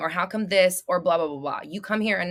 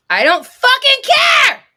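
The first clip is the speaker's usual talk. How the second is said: very high, very loud, drawn-out swooping scream; 13 dB louder than usual. Reacting to someone who says the words: yelling. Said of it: "What the fuck am I yelling for?".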